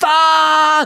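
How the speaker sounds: loud high-pitched screaming. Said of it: "I started screaming".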